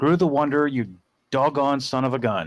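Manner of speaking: caught-off-guard, astonished, surprised exclamation. Exclaiming that another player knocked them out of first place: surprised. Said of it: "why do you sound surprised?".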